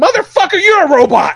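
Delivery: high, loud, angry, outraged yell.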